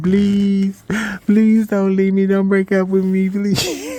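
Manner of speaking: put-on very high, crying, tearful, desperate voice. Retelling standing at the window crying: imitating own past crying plea. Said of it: "I was just standing at the window crying".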